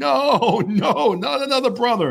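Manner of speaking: acted, very high, stretched-out wailing child's scream. A parent retelling taking a daughter out past the front desk: imitating a daughter screaming. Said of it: "She's screaming".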